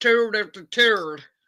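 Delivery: bad, fake put-on Irish brogue. Showing how a phrase sounds in an Irish accent, using a bad put-on Irish accent. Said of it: "in the Irish slash English accent".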